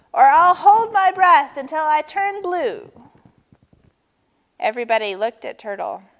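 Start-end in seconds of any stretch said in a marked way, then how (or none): 0.1-2.9 loud, high screaming, tantrum-like. Narrator reads Turtle demanding something from the others, screamed. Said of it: "screamed Turtle".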